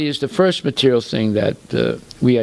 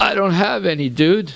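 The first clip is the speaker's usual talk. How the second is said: acted-out, smiling, grinning delivery, pitched up; 6 semitones higher than usual. Retelling a car crash, quoting the other driver: imitating a smiling reply. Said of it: "he told her with a smile".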